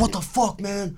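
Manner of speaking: high, panicky, spooked, freaked-out outburst. Retelling how a stranger reacted, imitating a freaked-out guy. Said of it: "and he's freaking out".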